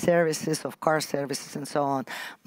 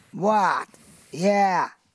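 very rude tone; 4 semitones higher, 4 dB louder than usual. Imitating the tone of voice heard on russian tv: mock-rude tone. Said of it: "it's a very rude tone of voice. ... something like this".

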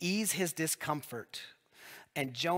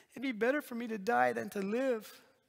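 high-pitched, whiny, complaining tone; 9 semitones higher than usual. Retelling the story, speaking as Jonah when he wants to die: mock-whiny Jonah voice. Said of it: "again in the whiner voice".

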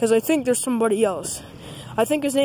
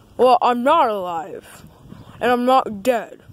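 sock puppet character voice; 3 dB louder than usual. A sock puppet character introduces itself, in Dog Christmas Sock puppet voice. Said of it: "my name is [name]. [name]. I'm a sock puppet".

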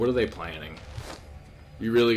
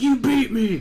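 high, loud mock crybaby wail. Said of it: "She really is a crybaby bitch".

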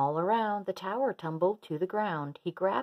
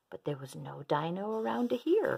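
ordinary delivery

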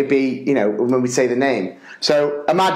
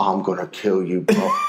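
mock, lower muttering under the breath; 6 semitones lower than usual. Retelling how a man, urged up to do the prayer, muttered under his breath. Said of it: "under his breath".

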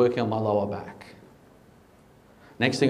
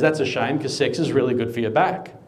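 normal talking voice

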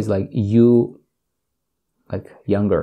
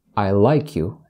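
usual speaking voice

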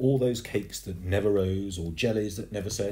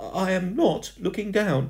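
very high, loud, insistent, drawn-out voice; 11 semitones higher, 5 dB louder than usual. Told by the ghost not to look down, she protests. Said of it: "she protested".

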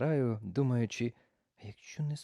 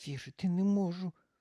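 high grumbling through clenched, gritted teeth; 7 semitones higher than usual. Charlina complains to the stray before taking the pump, through gritted teeth. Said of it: "крізь зуби поскаржилася Чарліна".

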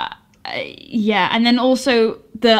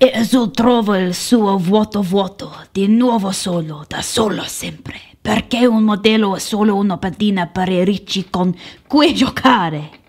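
over-the-top put-on Italian accent, hammed up. Made to read the script's italian lines aloud, in a stupid italian accent. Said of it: "made me read Italian in that stupid accent".

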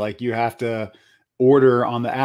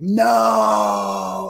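high, drawn-out shout, No long and stretched; 9 semitones higher than usual. Retelling a joke video made under an echoey bridge: imitating her own yelling. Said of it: "make a video where I was yelling".

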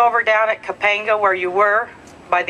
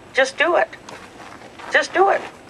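soft, hushed, slightly high encouraging voice; 7 semitones higher than usual. Retelling what a man told the speaker, quiet voice. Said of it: "in a quiet voice".

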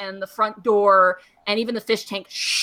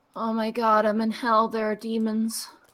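dazed, confused, bewildered just-woken voice; 4 dB quieter than usual. Voicing a wounded shopkeeper waking up after healing: confused waking up. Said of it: "she looks up at you and she goes".

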